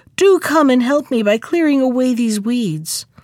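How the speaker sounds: ordinary delivery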